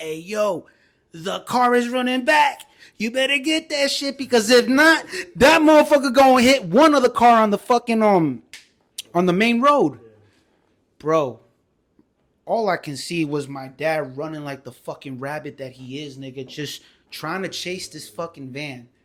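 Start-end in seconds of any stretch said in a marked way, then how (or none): 0.0-10.0 frantic, shrill, panicked yelling at full volume. Retelling screaming to dad as the van rolls back: retelling screaming loudly. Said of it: "I'm just screaming to my dad loud".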